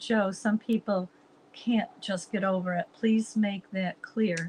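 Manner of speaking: ordinary delivery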